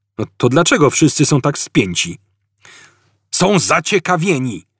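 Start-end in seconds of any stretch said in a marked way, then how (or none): 3.3-4.6 gentle roar. A narrator reads a character's reply to his anxious companions, roared. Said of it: "ryknął Zafod".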